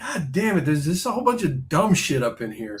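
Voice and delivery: acted-out, irritated, pissed-off ranting outburst. Retelling knocking things off the cereal shelf: retelling own pissed-off outburst. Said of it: "I get all pissed off and I go".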